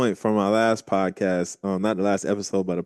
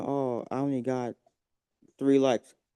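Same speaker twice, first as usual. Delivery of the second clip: play-acted mopey, let-down tone, slow and sad; 4 semitones higher, 7 dB quieter than usual. Imitating people who complain about few likes: imitating someone sounding sad. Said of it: "And you sound sad".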